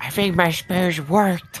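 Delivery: loud stage whisper. Voicing a character who whispers to Malice: loud whisper. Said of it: "he whispers, like, loudly and says".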